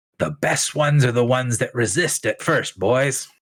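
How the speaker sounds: conspiratorial whisper at full volume. Voicing a character after being given the cold shoulder: loud conspiratorial stage whisper. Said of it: "conspiratory ri-, whisper, but says at full volume".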